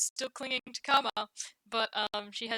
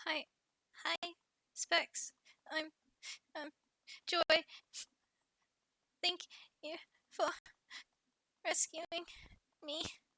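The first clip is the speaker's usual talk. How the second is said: high-pitched teary voice between sniffles; 7 semitones higher, 5 dB quieter than usual. Voicing a child still clinging and sniffling, thanking her rescuer: sniffling tearful Joy voice. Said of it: "sniff, sniff".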